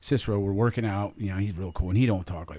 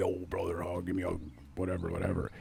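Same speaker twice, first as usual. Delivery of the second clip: put-on pro-wrestler voice, rough and creaky; 8 dB quieter than usual. Retelling what a wrestler said on arriving at the pro shop: imitating a wrestling voice. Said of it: "without the wrestling voice".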